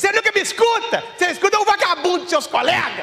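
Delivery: put-on shouting voice. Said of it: "uma gralha berrando no ouvido dele".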